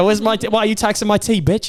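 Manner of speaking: fake British accent, played up. Acting out the angry Boston Tea Party crowd, put-on British accent. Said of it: "doing a British accent".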